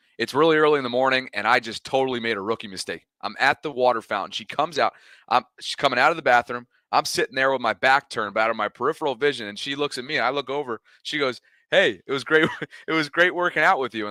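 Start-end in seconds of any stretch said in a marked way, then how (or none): 11.7-14.1 put-on keen, sort of interested delivery. Retelling what a woman said to him at the water fountain, in a mock-interested tone. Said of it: "sort of interested tone".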